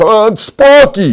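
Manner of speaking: very high, very loud, shrill, booming New York yell. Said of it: "me yelling with a New York accent".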